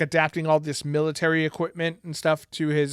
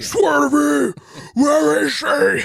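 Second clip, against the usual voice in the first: very high, slow, ragged and raw scream; 10 semitones higher, 8 dB louder than usual. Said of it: "screams at whoever he's talking to".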